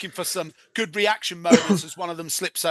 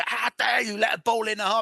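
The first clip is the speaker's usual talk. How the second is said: put-on screaming, higher; 5 semitones higher than usual. Describing a goalkeeper, imitating him screaming. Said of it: "he just starts screaming it".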